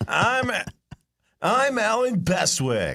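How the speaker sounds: very high, swooping character voice. Answering a request to do an impression: Alan Bestwick impression. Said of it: "do your best Bestwick impression".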